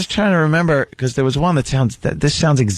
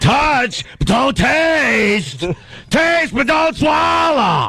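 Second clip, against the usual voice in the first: mocking, over-the-top delivery, higher pitched; 11 semitones higher than usual. Goofing on an actor's final speech: imitating an over-the-top speech. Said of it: "goofing on how over the top he was".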